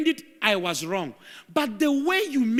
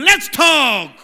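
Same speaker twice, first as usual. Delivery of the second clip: cross, fed-up, angry and annoyed; 10 dB louder than usual. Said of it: "Say it like you are angry at him".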